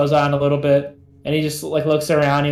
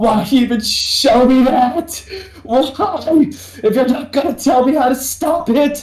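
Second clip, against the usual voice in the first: very high, sobbing, crying outcry; 10 semitones higher, 4 dB louder than usual. Voicing a character who is sobbing and upset: acted sobbing while shouting. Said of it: "he's sobbing".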